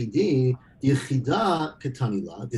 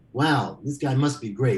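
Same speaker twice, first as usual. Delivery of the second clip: put-on sarcastic admiring tone. Speaker retells what Shmuel said about a man, as retold sarcastic praise.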